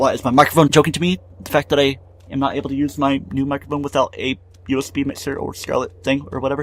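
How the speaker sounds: usual speaking voice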